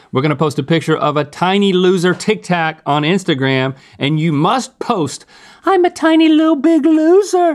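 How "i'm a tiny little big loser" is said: very high, loud, squeaky little voice. Telling viewers what comment they must post: high-pitched voice. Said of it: "In a high voice like that".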